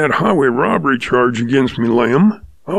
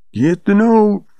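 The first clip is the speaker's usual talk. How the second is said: even, unforced, level, low-key delivery; 4 semitones higher than usual. Narrator reads Hank answering Craig's demand for the money, said quietly. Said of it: "Hank said quietly".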